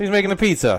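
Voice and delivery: put-on New York accent. Mocking how New Yorkers talk: New York accent. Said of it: "I'm working on a New York".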